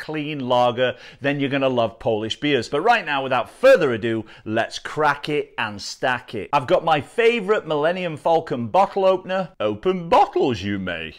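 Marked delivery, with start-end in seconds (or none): 9.6-11.1 clumsy sing-song voice with badly swooping pitch. Opening a beer bottle with a Millennium Falcon opener: worst Yoda impression. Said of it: "That was the worst Yoda impression ever".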